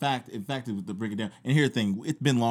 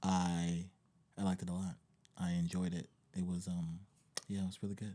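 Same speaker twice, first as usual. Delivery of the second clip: very depressed, much quieter and lower; 4 semitones lower, 11 dB quieter than usual. Asked how they liked Game of Thrones, answering sounding very depressed. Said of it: "You sound very depressed".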